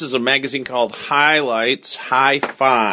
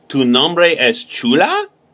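rising pitch at the end on chula; 2 semitones higher than usual. Teaching a Spanish phrase as a question: rising pitch on chula. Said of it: "it's a question mark, so it goes up at the end".

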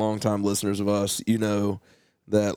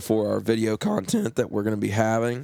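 voice cracking. Host announcing upcoming Patreon video content, voice cracking. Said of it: "I apologize for the voice crack".

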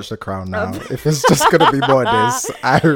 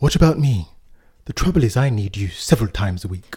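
put-on posh, toffee upper-class RP accent; 3 semitones lower than usual. Trying to speak like a posh, toffee posh twat, use a posh rp accent. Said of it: "try and speak like a posh... RP".

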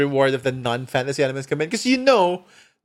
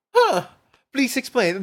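overdone, dripping sarcasm, pitched up; 8 semitones higher than usual. Asking someone to explain a game's appeal, with dripping sarcasm.

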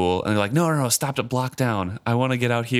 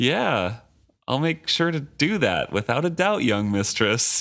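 mock heavy sarcasm, overly obliging, swooping sing-song; 3 semitones higher than usual. Retelling a driver's reply to a demanding passenger: imitating a sarcastic reply. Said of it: "he said sarcastically".

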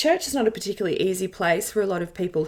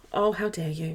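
heavily sarcastic, playing at being offended; 3 semitones lower, 3 dB quieter than usual. Retelling being taken off a youth leadership committee, retelling it very sarcastically. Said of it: "Very sarcastically".

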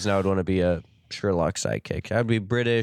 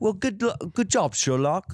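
very high, fake, put-on British accent; 10 semitones higher than usual. Speaker showing how they would talk as a sherlock character: put-on british accent. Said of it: "obviously I'm going to be a little British".

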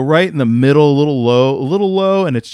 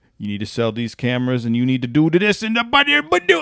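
put-on angry Cajun accent, ranting; 4 dB quieter than usual. Retelling how a cajun coworker talked when he got mad: imitating an angry coworker's cajun accent. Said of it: "when he got mad, it would start being like".

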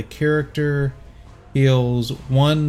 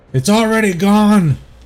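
put-on very loud, high-pitched old man holler; 7 semitones higher, 8 dB louder than usual. Game master voicing an old man hollering at the players, old man hollering out. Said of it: "You hear a voice holler out".

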